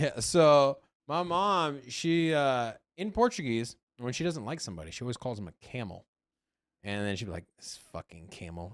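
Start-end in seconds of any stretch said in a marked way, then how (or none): 7.6-8.7 breathy, hushed whisper. Retelling how mom insults someone she dislikes: imitating mom saying it smiling. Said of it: "she says it with a smile".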